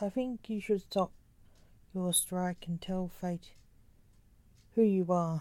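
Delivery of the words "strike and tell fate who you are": ordinary delivery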